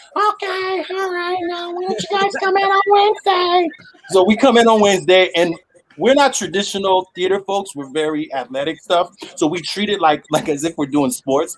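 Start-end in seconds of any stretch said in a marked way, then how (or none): 0.2-3.7 very high-pitched voice. Retelling a phone call to an agent, quoting her reply, imitating her very high-pitched voice. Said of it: "she had like a very high pitched voice".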